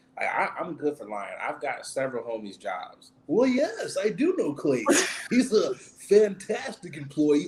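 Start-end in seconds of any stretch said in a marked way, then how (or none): 3.3-7.5 put-on polite customer-service phone voice, pitched up. Lying for a friend as a job reference: customer service voice. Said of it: "good customer service voice".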